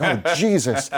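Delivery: startled outburst. Retelling jumping at a bang on the wall: imitating a startled exclamation. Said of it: "and I jump".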